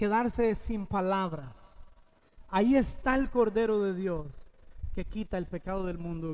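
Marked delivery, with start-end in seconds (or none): none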